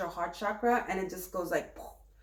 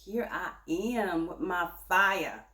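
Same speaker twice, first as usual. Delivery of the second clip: attempted southern accent, uncertain; 3 semitones lower than usual. Announcing the King of Pentacles, then speaking in an attempted Southern accent. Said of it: "I tried to make it south. Southern".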